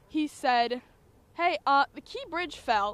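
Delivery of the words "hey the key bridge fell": very calm, slightly raised voice. The speaker retells their little brother waking them, imitating a very calm voice. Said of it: "in the most calm voice ever".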